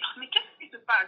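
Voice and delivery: ordinary talk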